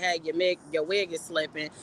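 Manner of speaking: plain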